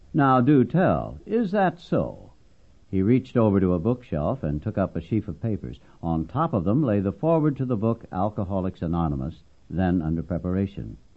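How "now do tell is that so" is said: heavy sarcasm, slow, swooping, drawn way out. Ed answers the elders who told him to quit or get out, heavy sarcasm. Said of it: "With great sarcasm".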